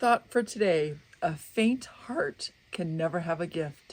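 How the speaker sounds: voice catching, cracking and breaking. A speaker sharing a thought for today, voice cracking. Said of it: "my voice is my voice is cracking".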